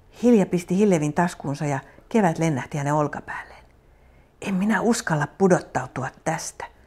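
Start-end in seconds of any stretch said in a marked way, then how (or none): 4.4-6.7 hushed whisper. Reading a girl's line high on a tree branch, whispered. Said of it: "Hilja kuiskasi".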